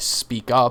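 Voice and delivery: ordinary talk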